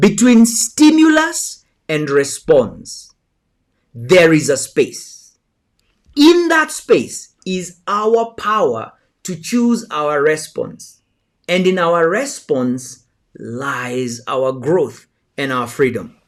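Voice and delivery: slow reading, words drawn out. Speaker rereads a quote to the audience, reading slowly. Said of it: "I'm going to read it again slowly".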